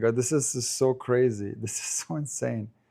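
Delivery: talking with laughter throughout. Tennis commentator apologizes for laughing during a match call: laughing while talking. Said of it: "I'm sorry I'm laughing".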